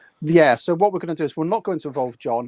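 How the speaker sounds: usual speaking voice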